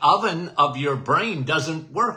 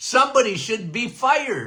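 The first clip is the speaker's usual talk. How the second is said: acted scream at top of lungs, higher; 5 semitones higher than usual. Acting out one's own warning, imitating own yelling at top of lungs. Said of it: "yelling at the top of my lungs".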